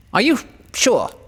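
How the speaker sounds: astonished, surprised, pitched very high. Reading Winnie the Pooh aloud, Rabbit answering Pooh: surprised. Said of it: "still more surprised".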